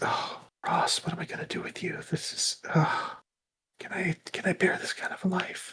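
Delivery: soft, hushed whisper under the breath. Describing a character sitting in the pews near the shrine, whispering as she walks away. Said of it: "She kind of whispers that".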